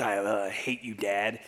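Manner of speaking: put-on slow, moody, sulky teenager voice. Imitating Jonah sinking to the bottom of the sea: mock sulky Jonah as emo kid. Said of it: "still seemingly rolling his eyes and just".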